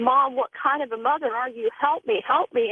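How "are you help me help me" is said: ordinary talk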